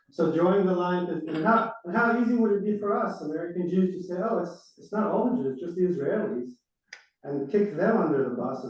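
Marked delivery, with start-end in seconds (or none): 4.3-6.5 put-on, heavily sarcastic voice. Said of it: "I'm saying it sarcastically".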